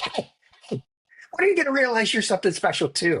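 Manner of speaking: high, fast, angry scolding tone. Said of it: "really, really mad at me".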